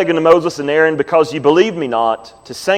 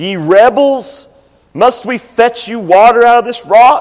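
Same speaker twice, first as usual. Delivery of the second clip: angry, pitched-up, prophet-like voice; 6 semitones higher, 3 dB louder than usual. Reading scripture aloud, acting out the rebuke to the rebels: acting out an angry Moses. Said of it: "I hear it in his voice".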